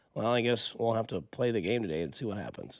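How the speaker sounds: terse, blunt, unbothered, non-defensive delivery. Retelling a coach's interview after his walkout: Bill Belichick monotone voice. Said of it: "the monotone voice in the interview".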